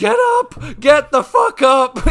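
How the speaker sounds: scared, slow, drawn-out screaming. Recalling someone falling while running with them, retelling a scream at him. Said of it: "I'm just screaming at him like".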